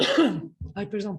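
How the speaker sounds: choking on a cough, coughing fit.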